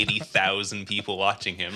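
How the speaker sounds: ordinary talk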